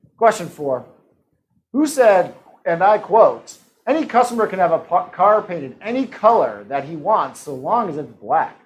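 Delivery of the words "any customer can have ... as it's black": plain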